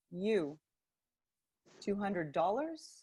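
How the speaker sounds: quiet, hushed, soft, under the breath. Retelling what a man said to the speaker, imitating him speaking quietly. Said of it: "And he says to me quietly".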